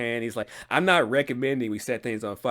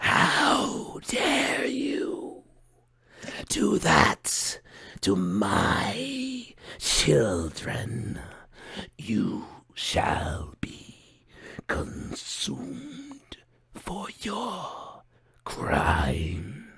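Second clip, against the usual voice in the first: creaky, eerie, high, menacing voice; 6 semitones higher than usual. Voicing a presence that overcomes the listeners' minds, in a creaky, eerie voice. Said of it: "you hear this creaky, eerie voice".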